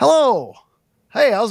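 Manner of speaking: put-on high, swooping elderly man character voice. In a skit, playing a homeowner answering a visitor at the door, old man voice. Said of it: "I'm gonna do an old man".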